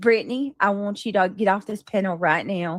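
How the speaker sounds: protective, concerned, motherly voice. Retelling how a protective friend told her to leave: imitating Don't Dive's concerned voice. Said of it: "it felt like my mama".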